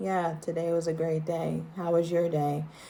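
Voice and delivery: every word kept on one single note. Imitating how Daria would speak about her day, monotone Daria voice. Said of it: "Very monotone".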